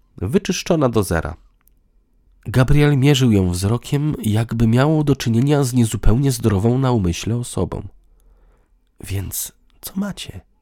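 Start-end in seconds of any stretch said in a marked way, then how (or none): 9.0-10.4 almost whispered, hushed near-whisper. Gabriel asks Klaudia what they have; almost a whisper. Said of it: "Spytał niemal szeptem".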